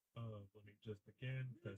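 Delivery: very quiet.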